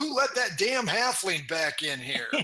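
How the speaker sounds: called out loudly in a character voice. Voicing a bartender who yells across the room: bartender yelling. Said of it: "the bartender yells out".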